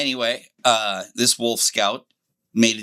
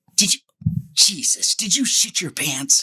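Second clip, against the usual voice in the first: put-on, pitched-up, disgusted, rancorous tone; 8 semitones higher than usual. A speaker retells a man squinting at him before other scouts, imitating disgusted rancor. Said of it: "he said it with so much disgust and rancor".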